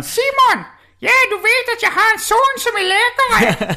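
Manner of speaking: fake Danish-accented voice. Retelling what a relative from Denmark said: imitating Paula Gordon's Danish accent. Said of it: "och pratar så här!".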